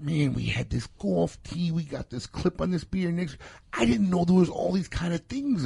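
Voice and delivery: small, squeaky, high little male voice. Retell what your producer, new to the cigar world, was saying, in a squeaky Paul impersonation. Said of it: "That's my little squeaky guy voice".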